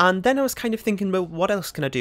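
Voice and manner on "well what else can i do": ordinary talk, nothing marked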